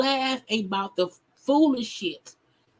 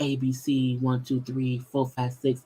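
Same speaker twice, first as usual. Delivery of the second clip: very slow, calm, very low unhurried drawl; 8 semitones lower, 3 dB quieter than usual. Mocking a bishop who seeks attention: imitating Bishop Robbery's slow talk. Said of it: "He talks really slow, really calm".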